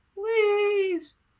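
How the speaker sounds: put-on very high small boy's pleading cry. Voicing a little boy calling after someone: child crying out. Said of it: "the little boy cries out".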